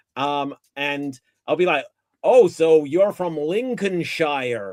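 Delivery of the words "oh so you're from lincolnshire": put-on American accent, in character. Retelling talking to english people: put-on american accent. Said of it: "playing this American character".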